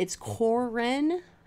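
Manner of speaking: Corin said slowly, unsure, with a questioning rising tune.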